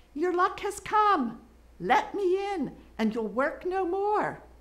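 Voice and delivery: tiny, very high, little fairy voice. Reading a story aloud, a fairy calls through the door in a little voice. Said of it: "a little voice called out".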